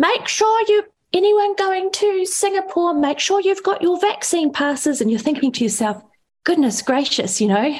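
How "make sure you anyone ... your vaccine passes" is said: very high, loud fishwife bellow. Retelling a woman's announcement in an airport line, imitating her bellowing. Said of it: "bellowing at the top of her lungs".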